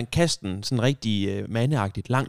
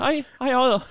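acted-out jittery voice, very high; 12 semitones higher than usual. Retelling walking in, acting out a nervous greeting. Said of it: "Og så kommer mig ind i sådan helt nervøs".

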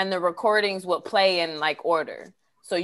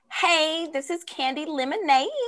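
slow, high annoying voice, rising at the ends; 9 semitones higher than usual. Imitating people's old voicemail greetings: imitating an annoying high voice. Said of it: "in those annoying voices".

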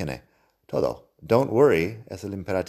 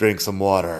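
brusque, curt, blunt tone; 4 dB louder than usual. Showing how a simple request can sound rude: curt, blunt command. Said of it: "Suena un poco borde si digo así".

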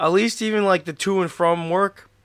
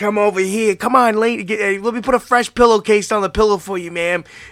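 loud, coaxing, creepy put-on creep voice; 4 semitones higher, 5 dB louder than usual. Acting out a creepy mattress shop owner luring women: creepy mattress shop guy. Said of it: "softcore creep".

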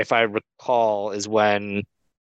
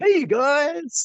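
zany 90s radio announcer voice, much higher. Giving a little sample of the next ad read, zany mid-90s radio guy voice. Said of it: "like mid-90s radio guy voice".

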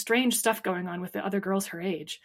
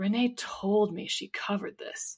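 slow, breathy, half-whispered mutter under the breath; 5 dB quieter than usual. On the phone, the narrator overhears Charlie; muttered. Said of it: "I heard him mutter something that sounded like".

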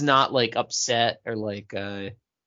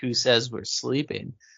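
normal talking voice

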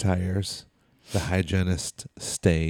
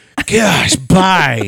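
put-on very loud, high kid voice, "bye" stretched out; 9 semitones higher, 10 dB louder than usual. Retelling saying bye to the Uber driver: imitating a twelve-year-old. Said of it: "And I went full twelve-year-old".

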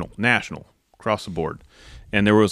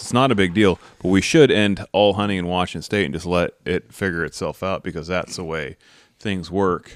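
plain

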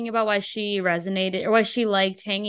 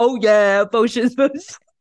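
loud, raised, self-impressed mocking put-on swagger voice; 3 semitones higher, 8 dB louder than usual. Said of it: "he thinks that he's".

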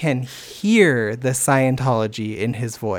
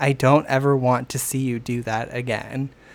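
ordinary delivery

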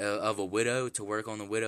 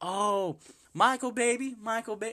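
put-on very high, doting, coddling baby talk; 13 semitones higher than usual. Retelling how a lady spoke to a friend: imitating a lady coddling someone. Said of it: "starts treating him and coddling him".

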